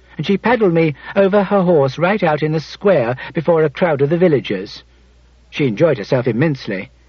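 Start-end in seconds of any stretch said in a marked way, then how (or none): none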